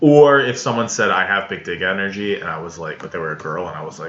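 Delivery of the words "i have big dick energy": normal talking voice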